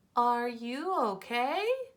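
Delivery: pitch rising at the end of okay. Speaker reading a text aloud to practice punctuation, voicing the dad's question with rising question intonation. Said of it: "did you hear my voice go".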